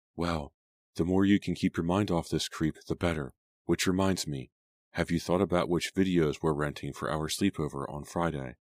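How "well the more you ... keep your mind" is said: usual speaking voice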